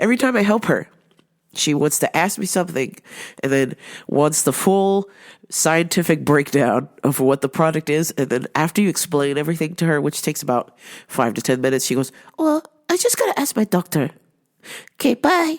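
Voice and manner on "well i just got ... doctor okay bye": fussy, very high-pitched voice. Retelling what a customer said, imitating her like Miss Juan. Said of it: "to a T".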